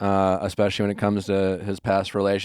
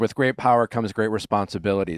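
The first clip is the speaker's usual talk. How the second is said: normal talking voice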